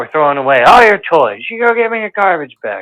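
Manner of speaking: furious, angry scolding, laying down the law. Retelling a mother catching her son at a puzzle: imitating an angry mother. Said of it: "She's pissed".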